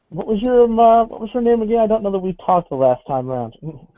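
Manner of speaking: high, fast, annoyed voice. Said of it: "she looks really pretty annoyed".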